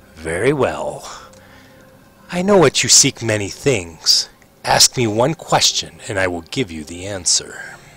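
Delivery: coldly amused tone. Voicing a ghostly figure who smiles at a player: cold amusement. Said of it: "sort of with some cold amusement".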